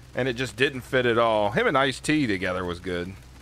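ordinary talk

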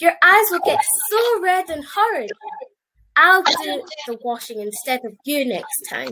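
ordinary delivery, nothing marked

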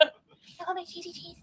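put-on high, slow baby voice.

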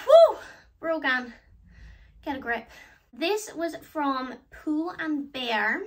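puffing, winded, breathless talk. Speaker just back from running for a headband, out of breath. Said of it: "I'm out of breath because I just ran".

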